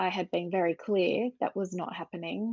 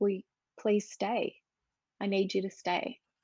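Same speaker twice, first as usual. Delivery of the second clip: imitated sobbing, crying voice. Retelling begging a partner to stay: retelling a crying plea. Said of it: "I'm laying there crying".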